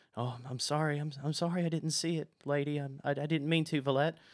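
timid, stumbling, stammering, cowering servant voice, scared. Voicing a frightened servant sweeping up hair: scared, timid voice. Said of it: "scared as he, like I've kinda described him, hunched over".

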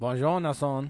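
loud, horrendous, put-on fake French accent. Greeting the other host at the start as a joke: horrendous put-on french accent. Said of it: "with a horrendously racist accent".

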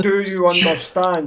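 slow, over-careful, deliberate, spelled-out speaking. Retelling people who thought they were from Romania: imitating slow talking. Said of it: "go and talk to me slowly".

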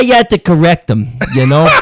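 put-on Staten Island accent. Speaker showing how correcting someone sounds in a Staten Island accent. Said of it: "in like a Staten Island accent".

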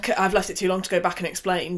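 ordinary delivery

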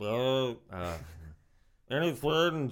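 very slow, drawn-out cartoon voice, swooping pitch. Trying out a voice while talking about impressions: Zoidberg voice. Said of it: "a Zoidberg or something".

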